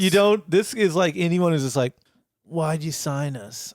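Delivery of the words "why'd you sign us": understated, subdued, quiet delivery, getting quieter. Quoting a movie character's line, imitating an understated, quiet delivery. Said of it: "Understated, quiet".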